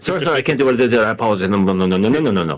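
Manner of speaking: rapid-fire put-on delivery. Imitating a character turning someone down: super fast like Aroha. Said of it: "super fast like Aroha".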